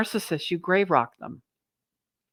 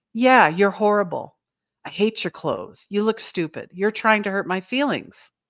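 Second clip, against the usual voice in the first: usual speaking voice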